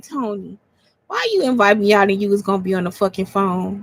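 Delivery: quiet, soft, hushed, low-key tone. Retelling their own words to the friend who took them out on their birthday, retelling a quiet remark. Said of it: "I just quietly was like".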